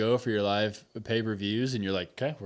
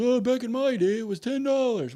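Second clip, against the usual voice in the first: very high, nostalgic put-on old-timer voice; 14 semitones higher, 3 dB louder than usual. Imitating future viewers complaining about network prices: imitating a nostalgic old-timer. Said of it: "I don't know what the voice was that I just did".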